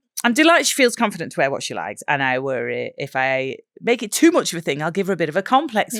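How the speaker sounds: usual speaking voice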